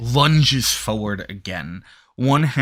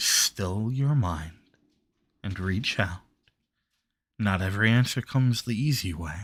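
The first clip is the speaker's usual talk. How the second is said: soft voice, quieter; 2 semitones lower, 6 dB quieter than usual. A narrator voices the listener's former master speaking to them, soft voice. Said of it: "You hear the soft voice of your former master".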